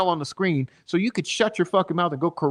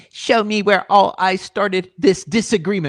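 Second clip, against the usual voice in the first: loud, petty, mocking bitchy voice; 3 semitones higher, 5 dB louder than usual. Answering chat, the speaker mimics someone demanding proof in a little bitch voice. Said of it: "Let me do a little bitch voice".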